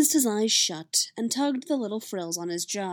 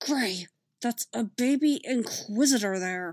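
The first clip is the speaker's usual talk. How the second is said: hissed in a low voice; 2 semitones higher than usual. Narrator reading a character hissing into the old clone's ear: low hiss. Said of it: "he hissed into the old clone's ear, his voice low".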